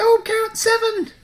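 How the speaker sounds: very high, very loud squeaky shout. Showing how the other person could shout the storm count at random; shouted in a squeaky voice. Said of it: "shout storm count at random in a squeaky voice".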